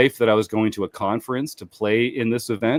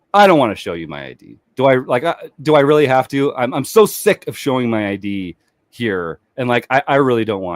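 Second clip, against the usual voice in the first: usual speaking voice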